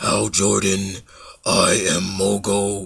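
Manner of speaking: very deep, soft giant voice. Retelling a Green Lantern story, the living planet addresses Hal Jordan: very deep Mogo voice. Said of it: "this very deep voice comes out".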